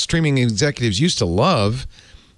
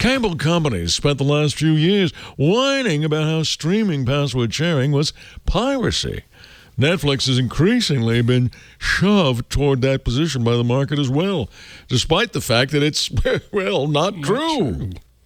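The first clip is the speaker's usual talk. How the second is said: grand, puffed-up, self-important put-on voice; 4 semitones higher than usual. Reading a passage aloud, the speaker uses a pompous voice. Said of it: "pompous voice".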